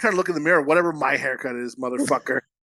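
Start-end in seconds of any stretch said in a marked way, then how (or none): none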